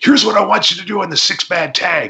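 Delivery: play-acted hyperactive, wound-up voice, very high pitch. Retelling what a booker told him: imitating hyperactive manner. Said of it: "in his hyperactive manner".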